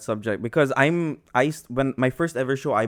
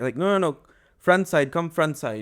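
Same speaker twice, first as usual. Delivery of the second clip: put-on broken English, higher; 5 semitones higher than usual. Describing how colleagues speak to a delivery driver, imitating broken English. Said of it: "they like have the most broken English".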